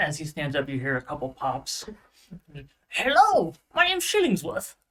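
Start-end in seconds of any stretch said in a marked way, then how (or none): 2.9-4.7 put-on very high, loud, bouncy, swinging old gnome voice. Voicing an old gnome shopkeeper greeting his first customers: Shillingsworth, old gnome voice. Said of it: "an old gnomish man, and old in gnomish years too".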